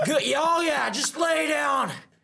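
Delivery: high, mocking shout. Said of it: "My dad would be on the mat".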